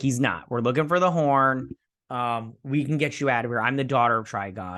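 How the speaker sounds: normal talking voice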